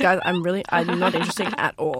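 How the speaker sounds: mock flat, deadpan delivery. Quoting a woman who said this while doing her eyeliner, deadpan voice. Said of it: "this deadpan voice".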